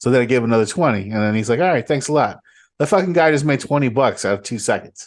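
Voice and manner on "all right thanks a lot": put-on New York accent. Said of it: "New York, like, fucking accent".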